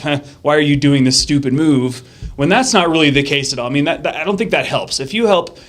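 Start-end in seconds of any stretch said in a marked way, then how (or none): none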